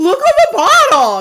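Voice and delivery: put-on shrieking, very high-pitched, very loud excited outburst. Retelling blurting out where the hidden tickets were: imitating own past excited blurt. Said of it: "I was too excited that I could not, um, contain my excitement".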